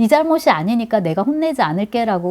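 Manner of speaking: usual speaking voice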